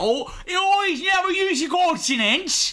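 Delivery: put-on British accent, slow, high and drawn out. Joking about how British people talk: mock British accent. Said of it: "the British are".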